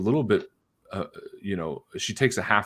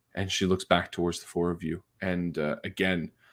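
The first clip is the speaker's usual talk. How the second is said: ordinary talk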